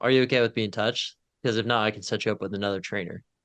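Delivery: ordinary talk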